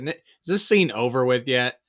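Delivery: ordinary delivery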